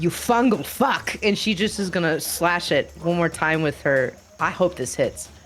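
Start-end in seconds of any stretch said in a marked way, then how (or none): 0.0-1.2 angry, seething through clenched teeth. Voicing a furious character who just heard an insult: angry, through gritted teeth. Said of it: "she's gonna grit her teeth".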